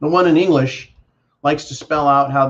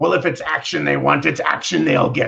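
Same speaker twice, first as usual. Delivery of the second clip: gruff, rough, creaky blustering pirate voice. Asked on pirate day to say something like a pirate, the speaker answers in a pirate voice. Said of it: "Could you say something like a pirate".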